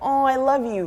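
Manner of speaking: put-on American accent. Showing how she tells her sister she loves her, in her American accent. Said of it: "I use my American accent".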